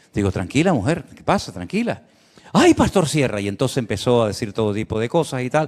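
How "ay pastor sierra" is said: put-on Venezuelan-accented speech. Speaker retells a woman calling out to him: imitating strong Venezuelan accent. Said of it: "acento muy, muy venezolano".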